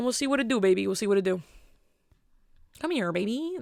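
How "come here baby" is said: talking like a cartoon frog. Joking around, showing off his Kermit voice. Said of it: "That's Kermit".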